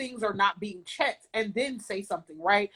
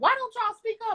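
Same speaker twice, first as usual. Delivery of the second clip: high-pitched mock yell. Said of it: "we're yelling".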